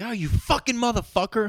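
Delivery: very high-pitched, furious yell. Acting out a gamer yelling while a baby sleeps: imitating someone yelling angrily. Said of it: "you get mad at him".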